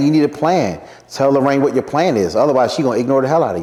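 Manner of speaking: normal talking voice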